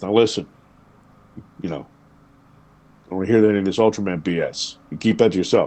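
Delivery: deep fatherly voice, dropped register. Speaker retells his dad warning him, imitating dad's low voice. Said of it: "he dropped his voice down into that lower register".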